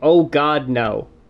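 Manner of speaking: mock, heavy, over-the-top, exaggerated sarcasm. Retelling the only line Anthony says in the clip: imitating Anthony's over-the-top sarcasm. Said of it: "a over-the-top sarcastic".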